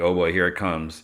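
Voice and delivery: ordinary talk, nothing marked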